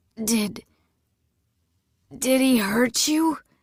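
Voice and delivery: put-on wheezing voice. Injured man, spitting blood, speaks to the woman beside him, wheezing. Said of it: "he wheezed".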